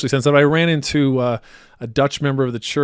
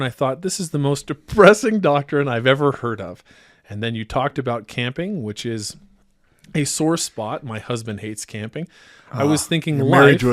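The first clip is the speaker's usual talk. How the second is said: plain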